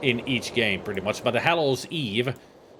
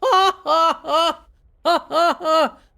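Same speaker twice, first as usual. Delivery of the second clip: very high, very loud, very slow sarcastic fake laugh; 8 dB louder than usual. Laughing at own joke about a character: sarcastic fake laugh. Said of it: "That's why I laughed. Sarcastically".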